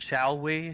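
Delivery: sarcastic. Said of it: "I'll sarcastically genuflect and say".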